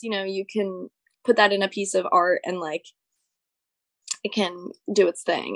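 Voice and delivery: normal talking voice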